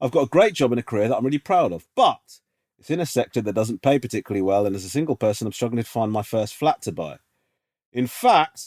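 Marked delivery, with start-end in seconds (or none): none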